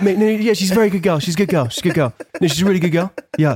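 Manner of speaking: Chelsea reality-show style chatter. Showing how it sounded on Made in Chelsea: imitating someone on Made in Chelsea. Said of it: "And then on Made in Chelsea, it'd be like".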